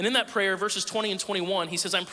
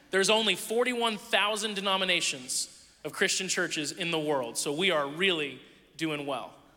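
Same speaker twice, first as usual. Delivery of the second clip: ordinary talk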